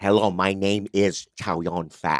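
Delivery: exaggerated careful English, put on. Retelling an interview by doing a Chow Yun-fat impression with overpronounced English. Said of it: "Chinese people overpronounce their English".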